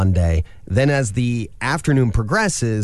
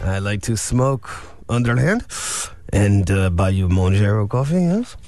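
put-on French accent, evil villain voice; 2 semitones lower than usual. A co-host jokes in a voice the other says sounds like a french man. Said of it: "Or I sound like an evil villain".

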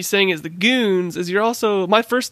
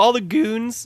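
cracked voice breaking mid-phrase; 3 semitones higher than usual. Starting the episode, asking everyone to greet a new listener; voice cracking. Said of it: "my voice cracked".

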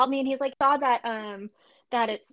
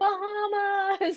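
mock excited shout, higher; 9 semitones higher than usual. Imagining getting off a plane at the beach: pretend excited arrival shout. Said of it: "I'd probably get off a plane and be like".

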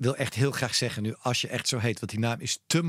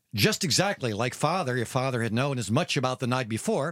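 put-on American-accented speech. Asked for an American accent, the speaker rereads the passage in an American accent. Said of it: "Amerikaans accent".

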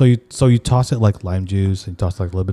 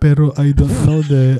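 put-on European-tinged Filipino accent; 6 semitones higher, 4 dB louder than usual. Mocking how European Filipinos talk, in a European Filipino accent. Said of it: "you hear them talk like".

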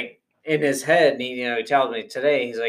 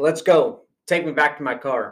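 put-on stern, demanding tone; 3 semitones higher than usual. Retelling his dad's last warning to the driver: imitating a stern order. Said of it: "as stern as he could possibly be".

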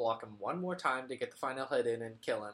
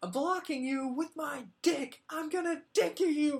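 play-acted, very high, upset, angry outburst; 14 semitones higher, 4 dB louder than usual. Retelling raging at a boss fight after throwing the controller: imitating own past anger. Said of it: "I get so upset".

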